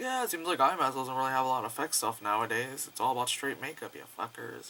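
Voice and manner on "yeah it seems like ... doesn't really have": plain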